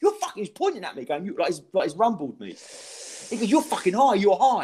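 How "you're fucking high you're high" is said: acted aggressive tone, much higher pitch. Retelling a man pointing at him before going on stage, acting out an aggressive accusation. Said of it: "he was aggressive".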